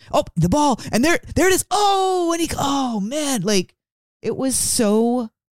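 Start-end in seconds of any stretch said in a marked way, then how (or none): 0.1-3.4 put-on, mimicked man's scream, pitched higher. Retelling how a sports fan in the car screamed at the radio game: imitating a man screaming at the radio. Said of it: "he would scream like my mom at, like, at the radio".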